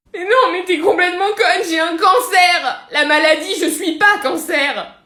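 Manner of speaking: high, loud sobbing, crying through the words. Answering someone who just read her astrological chart, crying while talking. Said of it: "tu pleures, on comprend rien".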